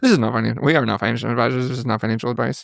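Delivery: rushed, rapid fine-print disclaimer rattle. Repeating the financial disclaimer again after a co-speaker's remark, fast disclaimer speed. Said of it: "Now you got the disclaimer speed".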